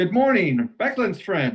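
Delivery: put-on bright, cheerful, high sing-song teenage voice. Narrating a story, a voice is suddenly heard in the morning mist: cheery voice. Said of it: "Comes a cheery voice".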